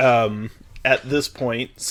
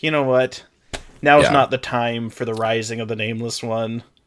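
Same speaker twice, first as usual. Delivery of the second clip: ordinary talk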